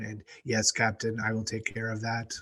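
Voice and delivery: emotionless, dead-even, very monotone level pitch. Picturing how a character would answer his captain, very monotone. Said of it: "his manner of speaking would be very monotone".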